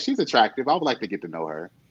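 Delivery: plain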